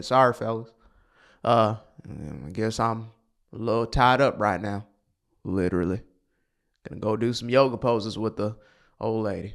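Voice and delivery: thick, deep, laid-on put-on Southern accent. Imagining a man on screen, the speaker voices him in a deep southern accent. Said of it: "got this deep Southern accent".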